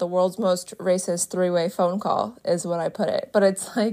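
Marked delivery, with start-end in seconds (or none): none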